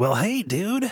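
put-on very high-pitched cartoon-boy voice. Imagining an interviewer asking a voice actor for a character, in a Bart Simpson voice. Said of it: "can you bring Bart Simpson in here for me?".

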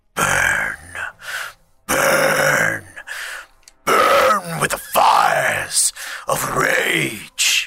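very low, very slow, rasping guttural growl. Voicing a magical axe as it flies into a hand: deep guttural voice. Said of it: "you just hear a deep, guttural".

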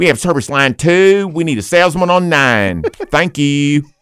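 loud PA announcer voice. A guest shows off PA announcement voices, asked for the boss's nephew: PA voice as Marvin. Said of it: "I can do PA announcements with different voices".

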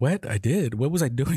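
plain

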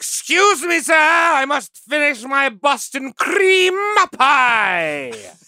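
put-on Romanian accent, "pie" drawn out. Retelling a story, quoting what the officers say, in a Romanian accent. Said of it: "Your Romanian accent is killer".

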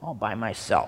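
put-on whiny seven-year-old child voice. Retelling Martha's words to Jesus: Martha in a whiny 7-year-old voice. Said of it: "You almost put a whiny 7-year-old voice in there".

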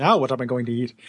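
super urbane voice, pitched low. Recounting the robot's first reaction after she is blasted, super urbane Benny voice. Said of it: "in that super urbane voice".

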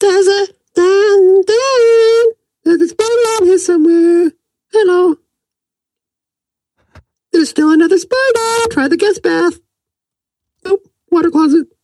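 very high, small, elfin voice. Imagining the voice in your head that guides a search, voice like an elf. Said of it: "maybe in a voice like an elf".

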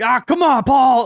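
very high, loud shout. Retelling the coach reacting to a player climbing the fence: imitating Brad Oller's dad. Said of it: "Brad Oller's dad, who was our coach, just going like".

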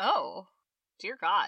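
surprised, astonished. Reacting to someone who first saw a film only last year, surprised. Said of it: "You sound surprised".

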